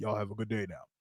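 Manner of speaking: very deep, hushed, soft, easy chill voice. Mimicking his quick press conference exit line, Cliff Kingsbury deep, chill voice. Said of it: "Deep voice, chill".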